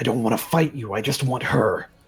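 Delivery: snarling, growling voice. Voicing an attacker who has just swung a sword at you, growling. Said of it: "he's just going to kind of like growl at you".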